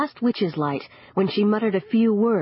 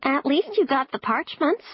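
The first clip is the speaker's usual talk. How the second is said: high-pitched, small talking bat voice; 8 semitones higher than usual. Reading a story, the bat Lil lands on the narrator's shoulder: high-pitched bat voice. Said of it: "My friend, a bat named [name], peered at me from the ceiling where she hung upside down. ... said a high-pitched voice".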